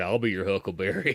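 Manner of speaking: creepy, leering put-on old man voice. Picturing an old man in the next bathroom stall: imitating a creepy old man. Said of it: "you just hear an old man come behind you, be like".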